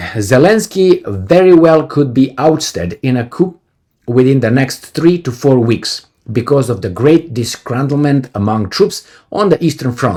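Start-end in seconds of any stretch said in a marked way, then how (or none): none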